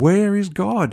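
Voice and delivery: high-pitched, bellowing, demanding voice. Telling a story of a minister questioning a boy: retelling a bellow. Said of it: "shook his finger in the boy's face and bellowed".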